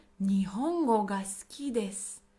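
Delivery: ordinary talk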